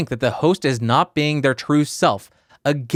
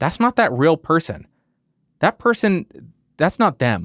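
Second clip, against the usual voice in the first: normal talking voice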